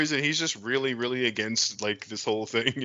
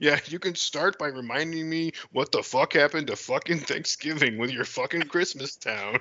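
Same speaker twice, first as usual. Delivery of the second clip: thoroughly surly, sullen, fed-up grumbling; 3 semitones higher than usual. Pitching a movie scene, Bruce Wayne snapping at a waitress: surly Bruce Wayne. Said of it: "he's just surly".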